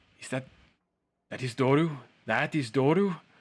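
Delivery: tearful voice on the verge of crying. Voicing a character who hears a scream and asks about his son: character on the verge of tears. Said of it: "tears welling up in his eyes".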